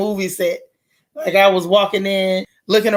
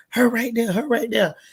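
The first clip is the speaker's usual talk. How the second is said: hushed, half-whispered stage whisper, repeated; 3 semitones higher, 4 dB quieter than usual. Speaker retells what they said to others about a woman nearby: retelling a half-whisper. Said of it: "I'm whispering like".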